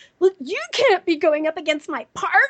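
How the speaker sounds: put-on high, pissed-off, miffed kid voice. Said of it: "kids that were really pissed off at me".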